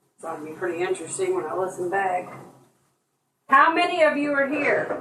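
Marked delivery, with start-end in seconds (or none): 3.5-4.9 high-pitched yelling scream. Calling out a question, screaming. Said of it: "I don't know what I'm screaming for".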